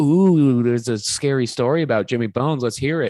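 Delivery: teasing, sarcastic, acted, fake-interested tone. Retelling characters' mocking request for a scary story: imitating a sarcastic tone. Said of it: "they were being sarcastic".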